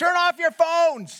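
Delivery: high yell. Retelling a man in the front row at a movie yelling at everyone, retelling someone yelling. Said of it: "he yells back at everyone".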